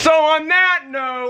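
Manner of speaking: high, drawn-out scream.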